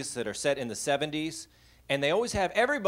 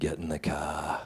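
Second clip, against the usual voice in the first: deep, slow voice with Boston vowels; 11 semitones lower, 4 dB quieter than usual. Retelling the dad waking the kids on Saturday: Darth Vader voice with Boston accent. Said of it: "He was like Darth Vader with a Boston accent".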